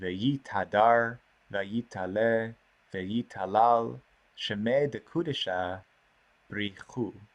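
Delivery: slow, measured reading.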